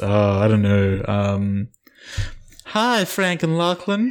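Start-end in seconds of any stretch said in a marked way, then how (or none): 2.7-4.1 put-on Southern belle accent, much higher and slower. Asked by her co-host to put on her Kara voice: Kara voice, Southern belle. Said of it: "she's a Southern Belle".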